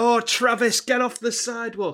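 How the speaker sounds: loud high yelling. Speaker retells others shouting at him to get off the sidewalk, imitating people shouting. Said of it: "everyone's shouting at me like".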